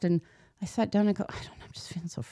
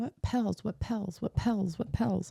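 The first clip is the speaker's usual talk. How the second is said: put-on child lisp, higher and quieter; 3 semitones higher, 4 dB quieter than usual. Retelling her youngest's words in the car: imitating a toddler's lisp. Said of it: "spoke with a lisp".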